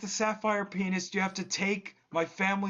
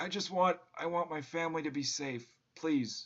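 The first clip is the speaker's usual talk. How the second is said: fake weepy, tearful, crying a little; 2 semitones lower, 4 dB quieter than usual. Voicing a dying man begging a player to keep his family safe: mock crying while pleading. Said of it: "he is crying a little bit".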